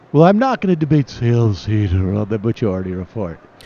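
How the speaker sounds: bored, unbothered voice dipping and sinking down. Quoting a guest's refusal to debate, Dave Rubin voice dipping. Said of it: "Rubin's voice sort of dips".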